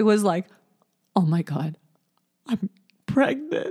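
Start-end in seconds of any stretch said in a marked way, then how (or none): 1.1-3.7 put-on tearful, shocked, sad crying voice. Recalling an unplanned pregnancy, acting out the moment: retelling a sad cry. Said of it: "Like a sad cry".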